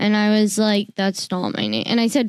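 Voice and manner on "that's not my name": plain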